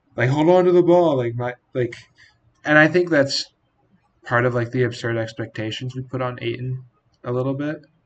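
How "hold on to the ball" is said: put-on, high, screamed voice. Retelling what a fan next to him kept yelling: imitating a fan screaming. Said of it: "screaming at Ayton".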